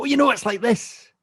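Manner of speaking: fired-up passionate talk, pitched very high. Showing how they sound when speaking about something: imitating own passionate speech. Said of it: "especially when I speak passionately about something".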